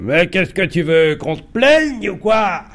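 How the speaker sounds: harsh, stern, cruel ogre voice, pitched high. Retelling how the father angrily answered the mother: mimicking a cruel ogre voice. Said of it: "avec la voix d'ogre sévère et cruel".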